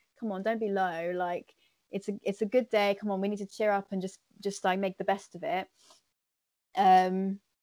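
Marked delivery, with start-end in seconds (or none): none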